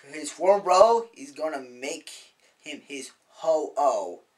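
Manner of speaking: drawn-out, very slow promo-style delivery.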